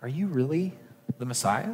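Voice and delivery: soft, hushed, doubting, despairing tone.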